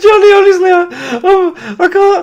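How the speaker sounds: laughing till crying. Talking to Johnny after a goal, laughing till crying. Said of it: "I've got tears in my eyes".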